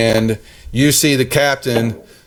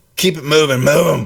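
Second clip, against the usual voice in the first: throaty, guttural voice pushed from back of throat; 4 semitones higher than usual. A game narrator voices a rider yelling from the back: guttural yelling voice. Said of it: "in a guttural voice".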